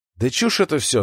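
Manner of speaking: ordinary delivery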